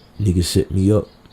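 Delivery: murmured, weighed-down, low, hushed voice. Retelling what he probably said: imitating a low voice. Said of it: "In a low voice".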